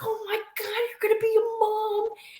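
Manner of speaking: mock overjoyed, very high, gushing and thrilled. Retell how he reacted when he saw your pregnant belly, imitating someone so excited. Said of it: "He was so excited when he saw my belly".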